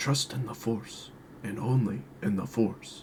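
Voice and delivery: small, mellow, deep voice. After the other speaker describes the voice needed to sound condescending: small, mellow, deep voice. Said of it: "small, mellow, and deep".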